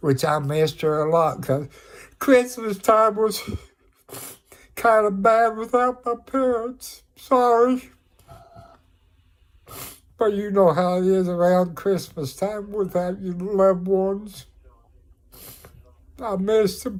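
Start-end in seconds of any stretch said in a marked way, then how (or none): 2.2-17.0 tearful, crying while talking. Speaker talking to a camera about a hard christmas, tearful. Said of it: "Sorry for my tears".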